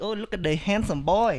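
loud, put-on Vietnamese accent. Friends discussing doing accents, speaker imitating a Vietnamese accent. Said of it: "In my Vietnamese".

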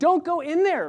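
very high-pitched, very loud, shrill yell. Acting out a viewer warning a horror movie character: acting out yelling at a movie screen. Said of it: "And you're just yelling".

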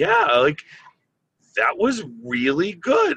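stock swooping surprised mom voice. The speaker retells their mom's reaction to them talking, imitating a surprised mom. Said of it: "saying it in the surprised mom, like kind of voice".

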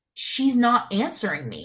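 usual speaking voice

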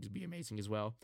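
voice cracking and breaking. Praising an actor's casting in the film, voice cracking. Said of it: "my fucking voice cracked so bad there".

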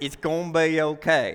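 put-on low country accent. Quoting a woman who always reassures the speaker, in her country accent. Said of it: "she has a country accent when she says it".

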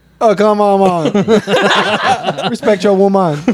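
high, laughing, bad fake Southern drawl.

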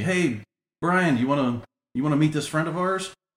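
high, half-shouted yelling. Retelling how a friend called up from seats back on a plane: imitating a yell. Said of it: "he kinda yells up to me".

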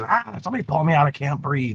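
high, small goblin creature voice. Voicing a goblin stuck head first in a hole: goblin character voice. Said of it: "He goes in head first".

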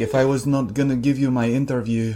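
imitated Scottish accent. Quoting a film character, scottish accent.

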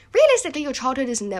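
voice suddenly jumping up, loud and high-pitched. Mid-sentence, the voice suddenly jumps high without meaning to. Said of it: "I don't know why my voice just went so high".

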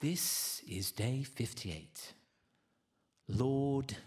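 very slow put-on English accent, narrator style. Imitating the English voice that reads the daily devotion: imitating an English narrator. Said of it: "he's like".

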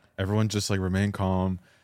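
ordinary talk, nothing marked

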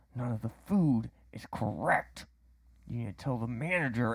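spoken through gritted, clenched teeth. Speaker retelling a customer's complaint about his order: retelling words through clenched teeth. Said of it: "I can tell it's through like clenched teeth".

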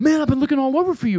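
very high voice with broken-English phrasing. Retelling what a man at the pool said: imitating broken English. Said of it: "in broken English".

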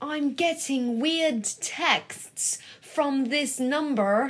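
bad put-on American accent, high and slow. Quoting what she would say, speaker does Riley's awful American accent. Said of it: "that's my, like, impression of Riley's awful American accent".

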